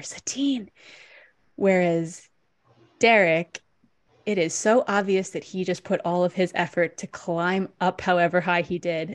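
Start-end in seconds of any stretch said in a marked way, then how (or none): 0.0-0.7 pitched-up, hushed, sneaking stage whisper. Retelling how an actor enters sneaking in: imitating a whispered line. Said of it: "it's a whisper".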